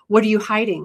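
plain

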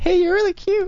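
high-pitched faked girl's voice. Practicing with Kevy, the speaker plays a girl giving a compliment, girl's voice. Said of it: "Put on a girl's voice and I'll do it".

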